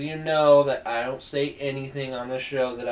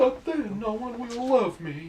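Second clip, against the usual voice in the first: very high, squeaky pet dog voice; 10 semitones higher than usual. Voicing a pet dog being told to lie down, Fergus's imagined voice. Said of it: "I imagine he sounds like that".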